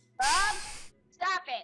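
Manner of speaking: loud, high yell. Telling another player to stop doing something: yelling. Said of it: "Stop yelling at me".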